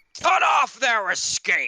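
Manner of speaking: gristly, loud, very high-pitched barked shout. Narrating a game scene, voicing an enemy who calls out, in a gristly shouting voice. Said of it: "a gristly voice call out".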